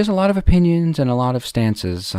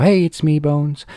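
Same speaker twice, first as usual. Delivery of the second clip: put-on higher woman's voice, video-intro style; 4 semitones higher, 3 dB louder than usual. Trying out that intro for own show, imitating Stacey Kennison's intro. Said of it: "that's maybe how I should start my show".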